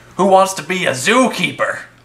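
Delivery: sneering, dismissive, scornful tone. Wiley answers the question about his childhood, sneering. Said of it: "Wiley sneered".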